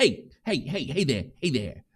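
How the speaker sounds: put-on heavy New York accent, laid on thick, put on. Recalling how he acted, imitating him with a thick new york accent. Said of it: "he put his like thick New York accent on".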